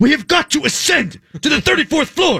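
very high, grand, rallying speech voice. Continuing a Ray Lewis bit about climbing stairs: imitating Ray Lewis. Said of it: "We're not doing Ray Lewis".

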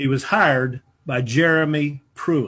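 very slow, deliberate, spelled out word by word. Addressing listeners so as not to be misquoted, speaking slowly for emphasis. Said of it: "let me speak slowly on this".

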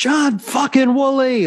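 play-acted, full-throated, shrill, very high top-of-voice yell. Retelling how the coach yelled his name across the room: retelling a top-of-voice yell. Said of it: "at the top of her voice, she yells".

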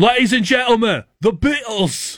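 announcer-style British voice. Describing another man's few accent attempts, doing his put-on British accent. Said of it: "when he does his British".

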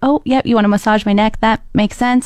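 mock-nervous, anxious tone. Retelling her answer when asked to take off her necklace, retelling nervous agreement. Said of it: "You sound so nervous and anxious this whole time".

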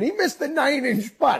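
screaming. Speaker retelling yelling into his microphone to his producer: retelling his own scream. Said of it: "and I'm screaming".

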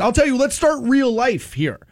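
ordinary delivery

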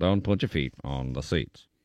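deep, soft put-on announcer voice. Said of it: "We gotta call Caliendo for this".

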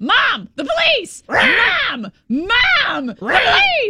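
very high, very slow squawking parrot yell. Telling a story about a parrot warning of police, imitating the parrot yelling. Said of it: "the parrot started yelling".

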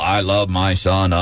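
very slow, flat, mechanical robotic monotone drone. Mimicking how he sounded in a comment: flat robotic delivery. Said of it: "He sounded like a robot".

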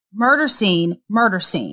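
ordinary delivery

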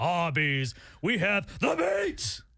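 acted unhinged ad-announcer delivery, climbing, manic pitch. Joking about an old ad slogan; Arby's ad guy yelling impression. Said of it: "Like an insane person is like".

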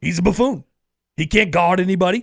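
mock sports commentator ranting voice. Doing a take on SpongeBob at the Super Bowl: Stephen A. Smith impression. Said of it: "If I was Stephen A. Smith doing a take".

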